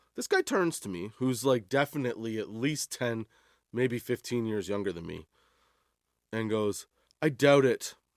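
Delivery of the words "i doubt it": acted-out, blank, dry, deadpan delivery. Retelling a younger customer's reply to an offer of help: imitating a straight-faced reply.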